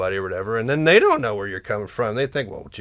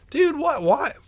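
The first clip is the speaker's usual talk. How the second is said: acted-out, very high-pitched, pissed-off indignant cry. Retelling own reaction to someone's criticism: retelling being pissed. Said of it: "I was pissed".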